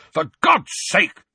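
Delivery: very high, loud, bellowing roar. Reading a story aloud, the narrator voices the uncle's outburst: roaring. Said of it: "roared Uncle Vernon".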